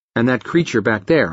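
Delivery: ordinary delivery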